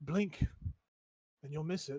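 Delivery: sudden soft, hushed half-whisper. A game narrator voices a half-whisper the player hears, half-whispering. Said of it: "you hear a whisper in your voice and it says".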